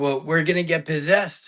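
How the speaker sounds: play-acted terrified, frantic, panicked, freaked-out outburst. Retelling own words to a helper after a scary night: retelling own panicked words. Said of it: "I'm freaking out".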